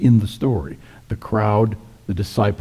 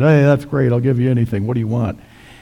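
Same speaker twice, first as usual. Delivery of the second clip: put-on drunken voice, higher pitch, faster pace; 2 semitones higher, 4 dB louder than usual. Speaker retells Herod jumping up at a dinner party after the dance, mock-drunk Herod. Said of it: "drunkenly said".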